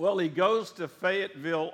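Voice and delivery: normal talking voice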